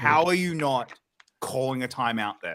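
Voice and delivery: ordinary talk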